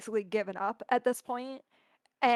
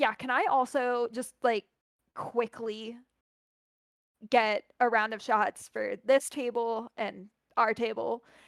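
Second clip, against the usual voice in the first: ordinary talk, nothing marked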